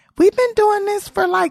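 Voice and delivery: indignant, pushed way up high. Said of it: "And I'm like".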